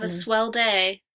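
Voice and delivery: hollow, insincere, perfunctory, said by rote. Signing off the podcast to listeners, in an insincere tone. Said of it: "you sound so insincere".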